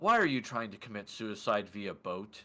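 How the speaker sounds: half-elven gentleman character voice. Voicing a half-elven gentleman who questions the players' boat plan: voicing a half-elven gentleman. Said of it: "he just looks at you and goes".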